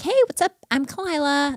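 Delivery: very high, swooping, put-on valley girl lilt. Retelling own senior-year way of talking: imitating own past valley girl accent. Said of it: "totally trying to adopt the Valley girl".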